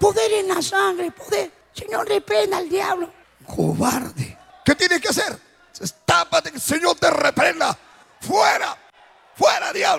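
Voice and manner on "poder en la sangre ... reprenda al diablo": put-on tiny, little baby-chick voice. Retelling what people said from under a blanket, in a tiny chick-like voice. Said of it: "Con voz de pollito".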